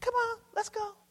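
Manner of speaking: high, soft, calling-out voice.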